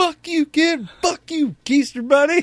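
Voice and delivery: very high, sobbing, crying outburst. Retelling losing a prize as a kid: imitating his crying childhood self. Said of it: "I just remember crying and just being like".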